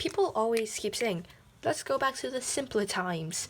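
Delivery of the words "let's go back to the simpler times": put-on British accent. Quoting what people always keep saying, in a british accent. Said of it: "I don't know why I did the British accent".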